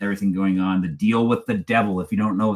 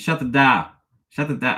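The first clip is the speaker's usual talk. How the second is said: terrible put-on Boston accent, higher; 5 semitones higher than usual. Trying out a movie line, bad Boston accent. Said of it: "I'm sorry, that's terrible".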